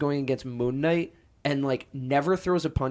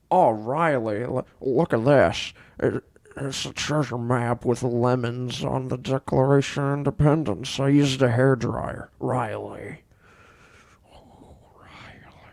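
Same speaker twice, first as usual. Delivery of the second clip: put-on star voice with a Scottish accent; 2 semitones lower, 3 dB louder than usual. Taking a turn at the bit, the speaker does a Nicolas Cage impression like Sean Connery. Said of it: "why do you sound like Sean Connery?".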